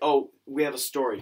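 ordinary talk

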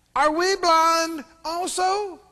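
very slow sarcastic tone. Reading the Pharisees' reply to Jesus: acting out a sarcastic retort. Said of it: "you can tell this is sarcasm, attitude".

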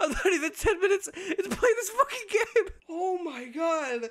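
very high, laugh-choked, tearful squeal of disbelief. Playing a SpongeBob game and unable to stop laughing, crying with laughter. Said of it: "I'm gonna cry".

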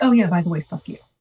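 play-acted cranky, sulky, grumpy brush-off. Retelling what Bridget said on coming home: imitating Bridget being grumpy. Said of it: "So she's all grumpy and shit?".

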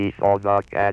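flat, machine-like monotone computer voice. Demonstrating early computer speech from punched cards: flat monotone computer voice. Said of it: "The flat, monotonous tones of the computer".

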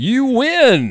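very high-pitched TV game show host voice. After suggesting the idea, the speaker delivers the line in a game show announcer voice. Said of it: "I figure the game show announcer voice would be good".

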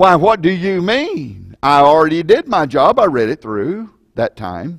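play-acted, loud, swooping, indignant, insulted, sarcastic tone. Imitating a churchgoer asked to reread the Bible: imitating a sarcastic, insulted reply. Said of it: "This sarcastic, angry, insulted look at me".

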